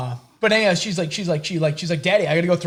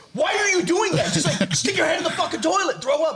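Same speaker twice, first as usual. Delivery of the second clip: very high-pitched, shrill, scolding shout; 11 semitones higher than usual. Retelling yelling at a daughter who threw up: retelling own yelling. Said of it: "yelling at her".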